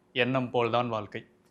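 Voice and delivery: ordinary talk, nothing marked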